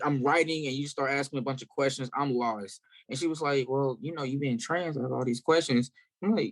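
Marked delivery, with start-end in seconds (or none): none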